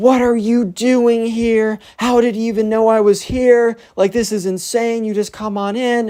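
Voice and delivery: mock screeching, very high-pitched screaming. Retelling how Alex reacted to an ex showing up: imitating Alex screaming. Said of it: "you immediately hear Alex start screaming".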